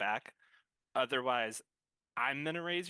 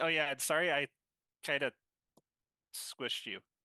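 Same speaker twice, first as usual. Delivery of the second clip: smug, smirking tone. Apologizing in character for squishing someone during a persuasion roll: smirking apology. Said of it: "he's doing it with a smirk, not, like, in an angry way".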